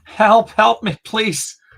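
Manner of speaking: shrill, very high sobbing scream. A bleeding, panicking character stumbles around trying to hold on: sobbing and screaming. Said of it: "a mixture between like like sobbing and screaming".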